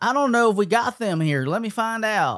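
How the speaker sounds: put-on high-pitched female Southern accent. Retelling a phone call asking about a dress code, Southern girl accent. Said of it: "southern girl on the other end".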